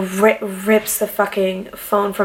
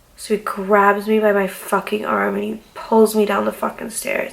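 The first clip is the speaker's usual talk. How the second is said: ordinary delivery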